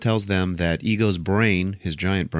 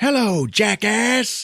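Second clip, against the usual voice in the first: very high-pitched yell; 3 dB louder than usual. Retelling how Yondu yells down at Ego from his ship: imitating a yell. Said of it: "yells down at Ego".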